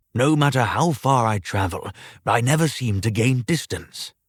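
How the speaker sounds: ordinary delivery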